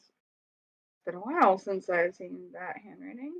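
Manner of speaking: muttered under the breath. A player's character speaks after burning a letter, under the breath. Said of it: "I say under my breath".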